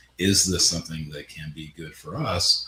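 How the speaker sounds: ordinary talk, nothing marked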